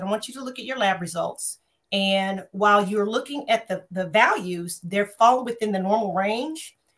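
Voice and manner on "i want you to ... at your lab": ordinary delivery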